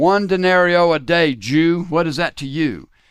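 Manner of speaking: play-acted, loud, yelled retort. Telling a joke, the speaker voices a roman guard answering a rabbi, acting out a yell. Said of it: "he yells out".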